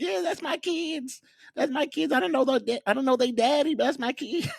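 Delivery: acted-out cheery mom voice, way up high. Imitating the mom in a video: imitating the mom, all happy. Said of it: "The mom's over there all happy".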